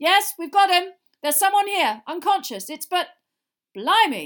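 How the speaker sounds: very loud, shrill, high-pitched calling out. Mr. Diggory calls out to the others from the darkness, shouting. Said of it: "they heard Mr. Diggory shout".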